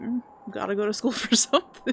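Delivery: normal talking voice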